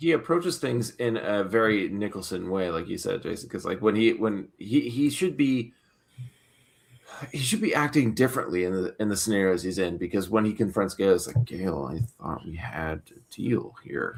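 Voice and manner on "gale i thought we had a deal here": very low, slow, hushed quiet intensity. Imitating the actor confronting Gale: imitating the actor's quiet intensity. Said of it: "That's a really good impression".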